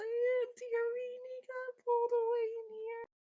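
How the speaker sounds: put-on kid crying, overdone. Pretending to be a lost child to a Walmart employee; fake crying child. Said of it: "I'm going to really lay it on thick".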